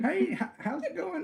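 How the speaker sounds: put-on pleasant Texas accent, very high pitch. Retelling a phone call from a producer's assistant: imitating Lynn Corzine's Texas accent. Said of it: "Just very pleasant, um, Texas accent".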